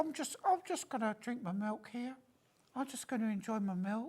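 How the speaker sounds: soft, high put-on cat voice. Imagining the cat meeting Rocky in a bar, speaking as the cat: put-on cat voice. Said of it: "What is, what is that accent? I'm doing the cat".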